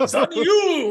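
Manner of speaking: booming, very loud, high martial-arts movie yell. Urged to say it from the chest, a speaker answers in a kung fu character voice. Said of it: "say it like a fucking kung fu character".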